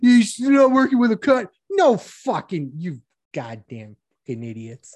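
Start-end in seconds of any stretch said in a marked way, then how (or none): 1.7-5.0 very low, quiet, furious angry rant. Ranting about reporters and journalists, angry. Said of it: "What are you be so angry for?".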